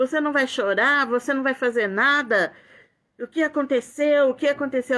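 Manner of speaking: play-acted, held-back, mild yelling tone. Retelling a drugged young woman shouting questions: imitating someone shouting. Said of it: "ela começou a gritar comigo e falar".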